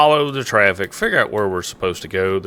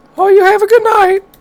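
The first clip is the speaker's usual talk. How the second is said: loud, very high, feminine middle-aged voice; 7 dB louder than usual. Retelling the officer's reply to the speaker, in a feminine forty-year-old voice. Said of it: "In the most feminine forty-year-old voice".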